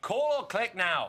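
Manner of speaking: shouting at a high pitch. Rehearsing a product pitch while a coach gives notes, yelling. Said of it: "you're yelling at me right there".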